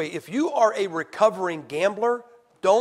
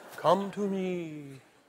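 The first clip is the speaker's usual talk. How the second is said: put-on soft, very feminine come-hither call; 7 dB quieter than usual. Speaker retells a glazed donut calling to him, in a very feminine voice. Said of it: "called to me in a very feminine voice".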